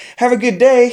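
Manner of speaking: schoolgirl-giddy, very high and loud. Retelling saying goodbye after a deal: imitating own giddy farewell. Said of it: "I get all giddy, like a schoolgirl".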